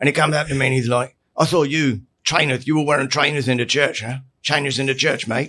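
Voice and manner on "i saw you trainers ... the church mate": put-on spoken in a Nottingham accent. Retelling a man confronting the speaker at church, speaker does a Nottingham accent impression. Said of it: "Nottingham accent?".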